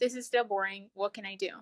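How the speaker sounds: ordinary delivery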